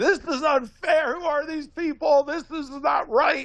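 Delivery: very high-pitched screaming through tears. Retelling a daughter's meltdown over a smaller paycheck: imitating screaming and crying. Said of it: "she was screaming and crying".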